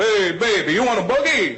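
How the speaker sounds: fake charming Italian accent, high and drawn out. Speaker showing how Italian guys could talk to a girl at a bar, fake Italian accent. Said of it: "you guys could fake your accent".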